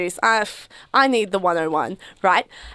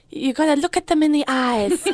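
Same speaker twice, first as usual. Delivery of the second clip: put-on Colombian accent on English, pitched up; 5 semitones higher than usual. Quoting their mum's advice on seduction, attempting mum's Colombian accent. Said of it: "That is my best attempt at my mum's Colombian accent".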